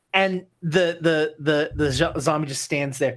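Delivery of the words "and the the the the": plain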